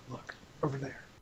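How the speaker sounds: hushed, very quiet voice. Voicing a companion who spots figures ahead: real quiet. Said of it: "he gets real quiet and says".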